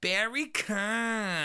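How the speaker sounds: Americanized pronunciation. Showing how Americans say the name, American pronunciation. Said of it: "But in America".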